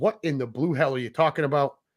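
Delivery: ordinary talk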